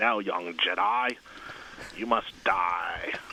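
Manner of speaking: voice dropped down low. Reading out a reader's request, then doing an Emperor Palpatine impression. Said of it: "would like you to do a Emperor Palpatine impression".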